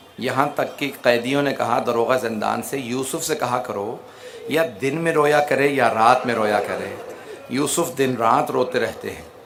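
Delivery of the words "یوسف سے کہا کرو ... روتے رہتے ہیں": ordinary talk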